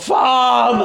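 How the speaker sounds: high-pitched, loud yell full of pain.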